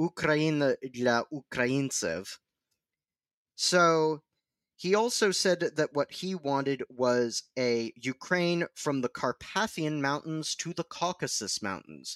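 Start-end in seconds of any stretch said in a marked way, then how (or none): 0.0-2.3 self-admittedly mangled put-on Russian accent. Speaker saying a nationalist's ukrainian slogan aloud, in a kind of russian accent. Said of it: "I'll be saying it in a kind of Russian accent".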